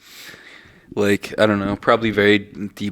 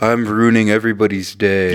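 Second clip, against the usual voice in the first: ordinary delivery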